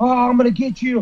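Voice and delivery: mild, held-back menacing, threatening yell. Retelling a fight in a buffet line, imitating someone screaming. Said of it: "Usman's still trying to scream at me".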